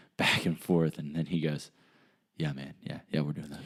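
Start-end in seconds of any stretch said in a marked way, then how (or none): 2.4-3.7 very quiet, hushed, secretive-sounding voice. Retelling a reply given after a look over the shoulder: imitating someone speaking quietly. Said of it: "real quietly".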